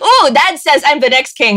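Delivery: plain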